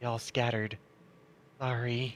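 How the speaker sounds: close, quiet, soft, hushed half-whisper. Storyteller voicing Goss half-whispering to the listener again: Goss half-whispering. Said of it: "as it whispers to you again".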